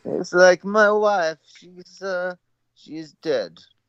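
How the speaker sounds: very high, terrible put-on Eastern European accent. Hosts joking about someone's on-air Borat act, doing a bad Borat accent. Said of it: "with terrible Eastern accent like Borat".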